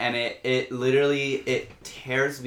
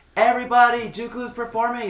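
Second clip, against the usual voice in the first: put-on very high, shrill, calling-out shout; 10 semitones higher, 5 dB louder than usual. Retelling how someone announced the show without a mic: imitating Reefy Royalty yelling. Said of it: "Reefy Royalty, just, like, yells".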